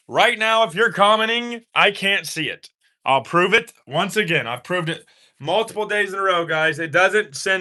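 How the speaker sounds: yelling, pitched high. Speaking on camera to viewers who are commenting, yelling. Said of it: "I know I'm yelling".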